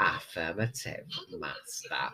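very hushed, low, quiet camp murmur. Quoting John Leeson's voice acting from Doctor Who, do a camp John Leeson impression. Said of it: "I sounded camp".

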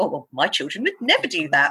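smug, self-satisfied voice, as if to oneself. Recalling judging parents of children having tantrums, speaker smugly quotes their past self. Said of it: "I was the one that was like smugly to myself".

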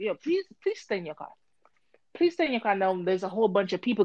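normal talking voice

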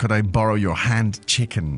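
ordinary delivery

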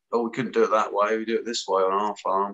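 normal talking voice

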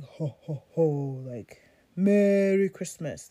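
very deep, dropped voice. Describing how Santa sounds, very deep Santa voice. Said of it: "very deep".

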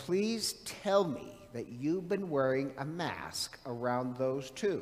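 normal talking voice

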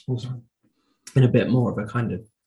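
voice failing, giving out completely mid-phrase. Discussing albums when the voice suddenly gives out: voice giving out. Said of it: "Voice is gone".

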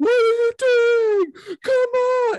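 mock very high, loud, drawn-out pleading near tears. Retelling a coach berating his fighter at UFC 203, mock pleading as Edmund Tarverdyan. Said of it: "pleading and, like, almost crying".

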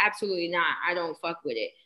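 ordinary talk

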